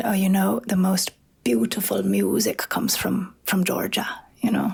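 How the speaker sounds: put-on old man's thick, gravelly Irish brogue. Retelling what an old man said about music from georgia, thick gravelly irish accent. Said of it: "in his thick, grovelly Irish accent".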